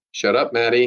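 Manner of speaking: usual speaking voice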